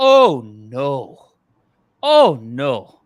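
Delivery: very loud, very slow put-on Scottish, oh no drawn out. Retelling what golf caddies said after a bad shot: imitating Scottish caddie accent. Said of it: "my Scottish accent comes from".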